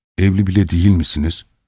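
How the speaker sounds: plain reading voice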